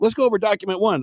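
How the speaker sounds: high, fast, mock eager presenter voice. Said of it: "They should have been like".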